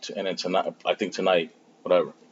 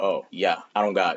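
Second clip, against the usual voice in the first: ordinary delivery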